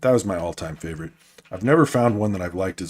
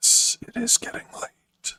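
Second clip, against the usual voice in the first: whispered, breathy ASMR voice. Streamer chatting with viewers late in a stream, in an asmr voice. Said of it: "I like my A S M R voice".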